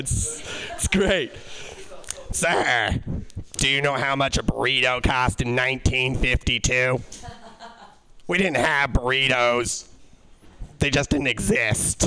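low, raspy madman voice. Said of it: "Talk like raspy madman secretary who has seen all".

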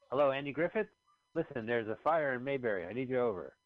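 put-on old-timey voice as on antique telephone. Joking about a character using an old-timey telephone: mock old-timey phone call. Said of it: "he's using the old-timey telephone".

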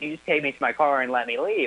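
usual speaking voice

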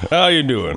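big Southern-sounding voice. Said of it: "He's like".

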